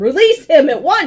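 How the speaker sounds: very loud, very high, full-volume screaming. A character points a sword at a root holding someone, screaming a command. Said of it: "point my sword at it and scream".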